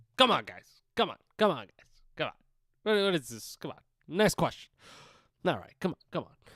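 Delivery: scoffing, dismissive tone, repeated again and again. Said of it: "And he always scoffs".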